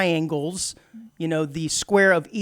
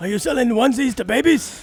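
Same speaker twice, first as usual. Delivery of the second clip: put-on typical old man voice, pitched higher; 6 semitones higher than usual. Joining in on quoting the sound clip: Bernie Sanders impression. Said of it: "sound clip of Bernie Sanders who sounds like the most typical old man".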